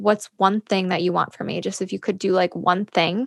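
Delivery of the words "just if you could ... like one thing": normal talking voice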